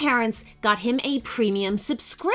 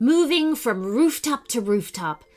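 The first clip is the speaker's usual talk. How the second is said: plain reading voice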